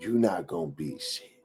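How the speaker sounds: quiet, low whispering. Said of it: "whispered in my ear".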